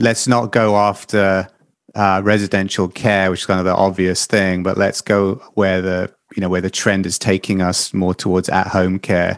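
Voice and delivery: ordinary talk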